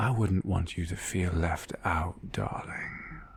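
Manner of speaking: soft, hushed whisper. A draconic presence appears behind the listener and speaks, whispering. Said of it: "as she just whispers".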